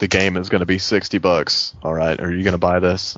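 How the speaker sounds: plain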